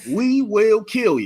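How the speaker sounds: proper put-on voice.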